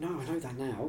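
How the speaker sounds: soft, quiet half-whispered voice. Admitting to the others that the phone was not on silent, half-whispering. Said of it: "You don't have to whisper that".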